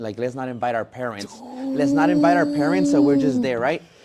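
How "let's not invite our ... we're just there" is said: much higher, louder emphatic insistence. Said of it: "My sister said".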